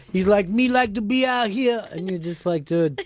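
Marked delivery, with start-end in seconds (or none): 0.4-1.8 put-on Patois accent, words stretched slowly. Telling others how the mayor of Toronto talked, imitating a mayor speaking Patois. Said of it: "the mayor of Toronto was doing the same thing".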